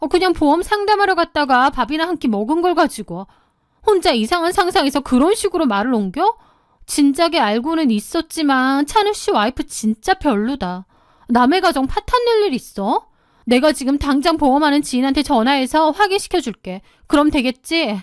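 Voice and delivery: snapping, defensive, indignant angry tirade. A wife rages at her husband over a friend's wife's gossip, in a sharp, angry outburst. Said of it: "그 긴 세월 동안 완벽해 보이는 제 아내의 이면에 그토록 소름 끼치는 두 얼굴이 숨겨져 있을 것이라고는 단 한 번도 상상해 본 / 외모가 단아하고 우아할 뿐만 아니라 누구에게나 나긋나긋하고 차분한 말투로 대화를 이끌어가는 사람이었죠. / 저의 아내 정미라는 주변 사람들이 모두 부러워할 만큼 완벽한 사람이었습니다. / 갑자기 얼굴을 붉히며 날카롭게 화를 내기".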